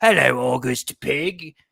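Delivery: loud, put-on British accent. Father shows how he greets his kids, in a British accent. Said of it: "a British accent".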